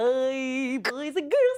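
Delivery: very deep, slow, drawn-out character voice. Auditioning voices when asked, in the voice of Barney: Barney voice. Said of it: "I'll be talking for the voice of Barney".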